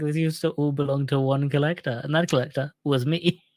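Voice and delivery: ordinary talk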